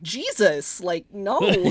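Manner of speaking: normal talking voice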